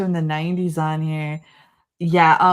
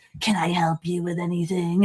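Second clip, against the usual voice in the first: creepy put-on voice, quieter; 4 dB quieter than usual. Retelling how a creepy video store owner spoke to customers, imitating a creepy shop owner. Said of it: "hunch like Nosferatu and be like".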